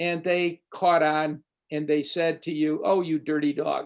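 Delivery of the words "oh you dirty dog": put-on smiling, playful teasing tone. Acting out what someone who caught on to your joke says, imitating a smiling tease. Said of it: "with a smile on their face and a tone in their voice".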